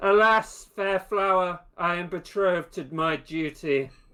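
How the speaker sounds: calling out loudly. A player voicing a character who peeks over and calls to a devout woman: shouting. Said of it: "he shouts to Diligence".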